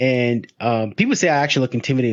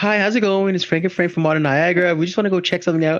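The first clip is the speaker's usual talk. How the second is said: peppy, bright, high-pitched cheerleader voice; 7 semitones higher than usual. Retelling how they greet the staff, sounding like a cheerleader. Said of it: "why do I sound like like so".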